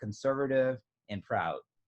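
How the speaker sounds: normal talking voice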